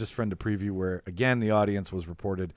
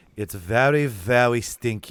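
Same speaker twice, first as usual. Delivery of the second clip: put-on thick German accent, loud, very slow, drawn out; 5 dB louder than usual. Acting out Augustus Gloop's answer when asked what he thinks, in a thick German accent. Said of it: "in this like thick German accent".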